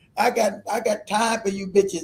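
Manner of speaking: put-on Louisiana accent. Mimicking how people in louisiana talk, imitating a louisiana accent. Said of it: "That's a Louisiana accent".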